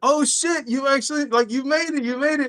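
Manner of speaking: acted, high, caught-off-guard, disbelieving surprise. Retelling how Thalo reacted to the speaker showing up: imitating Thalo's surprised reaction. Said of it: "Thalo was surprised".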